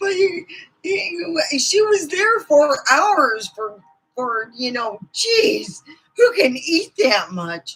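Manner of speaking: high-pitched voice, giggling through the words. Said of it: "I shouldn't be laughing".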